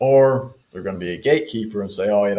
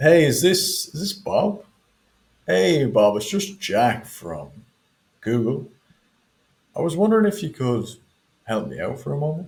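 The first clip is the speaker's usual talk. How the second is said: even, neutral, mildly puzzled tone, pitched up; 5 semitones higher than usual. Demonstrate a sales call to Bob as Jack from Google, in a neutral, confused tonality. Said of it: "neutral tonality, confused tonality".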